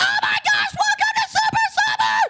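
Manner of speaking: very loud, very high, excited screaming.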